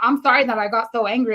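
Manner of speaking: ordinary talk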